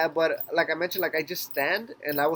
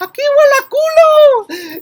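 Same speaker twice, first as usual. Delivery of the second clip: put-on old lady hollering, very high, loud, slow; 17 dB louder than usual. Retelling how an old lady on the bus yelled out: imitating an old lady yelling. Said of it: "an old ass lady that yells out".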